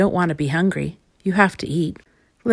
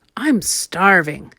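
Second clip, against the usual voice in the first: growling lion voice, storybook style. Narrator reading a children's story, voicing the lion: growling lion. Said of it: "growled the lion".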